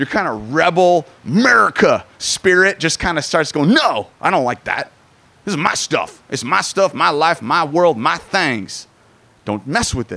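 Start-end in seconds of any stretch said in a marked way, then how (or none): 3.7-10.2 vague, loosely Southern put-on twang, hard to place. Voicing the listener's rebel American spirit pushing back, in a vaguely Southern accent. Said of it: "It's kind of ambiguously Southern".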